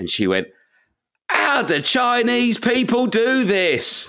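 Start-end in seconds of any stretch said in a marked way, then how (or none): 1.3-4.1 very high, very slow, put-on shout at top of voice. A parent retells what their youngest daughter said at a restaurant, retelling a shout at full voice. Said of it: "At the top of her voice".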